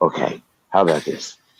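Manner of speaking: soft quiet voice. Trying a quieter voice after speaking too loud into the mic: talking softly. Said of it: "I'll just talk softly".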